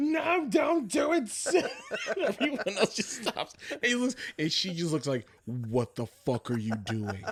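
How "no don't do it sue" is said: very high, very slow, drawn-out pleading scream. Retelling dropping to the knees in the hallway to beg a woman, retelling a full-lung scream. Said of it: "scream at the top of my lungs".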